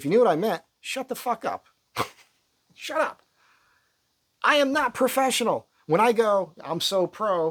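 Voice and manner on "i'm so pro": sarcastic, ironic, much slower. Speaker, having said they are not professional, jokes sarcastically. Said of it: "I'm being sarcastic".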